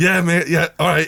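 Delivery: mock-fuming, grudging, held-in anger. Retelling agreeing to a kid's photo request: retelling suppressed rage. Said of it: "And I'm like raging at the time".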